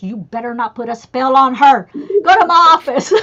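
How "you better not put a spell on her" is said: whispered delivery. Speaker retelling what the manager whispered to them, retelling a whisper. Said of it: "and he whispers".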